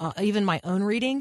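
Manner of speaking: ordinary talk, nothing marked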